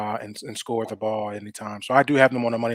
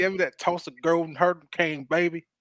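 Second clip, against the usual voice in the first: bad put-on Tulsa accent; 7 semitones higher than usual. The hosts pick Tulsa, and one tries it in a bad Tulsa accent. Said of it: "Let me get that little accent".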